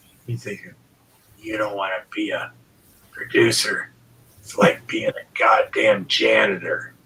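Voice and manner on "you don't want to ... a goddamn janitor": low, raspy, rough voice. Quoting advice about being a producer: Bill Hanna imitation. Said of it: "anybody that worked with Bill does an imitation of him".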